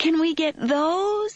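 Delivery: eager, hopeful pleading, very high pitched. Narrator voicing a little boy asking his mother, asking hopefully. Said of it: "He asked hopefully".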